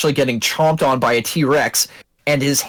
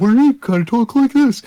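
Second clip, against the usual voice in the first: dopey cartoon moose voice, higher; 9 semitones higher, 3 dB louder than usual. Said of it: "a Bullwinkle Moose kind of, like, accent".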